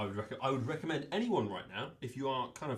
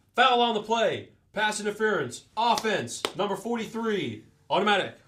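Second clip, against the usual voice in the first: very loud, high, fake American referee-style accent; 10 semitones higher, 11 dB louder than usual. Asked to announce the call, done in a put-on american official voice. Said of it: "announce that in your uh, American official voice".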